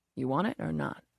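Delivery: deep, low voice. A man speaks to the narrator on a bed, in a quiet, deep voice. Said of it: "he says in a quiet, deep voice".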